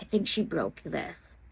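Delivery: almost whispered, very quiet, hushed. Retelling what the boss said to the manager: imitating a near whisper. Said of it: "whispers it almost".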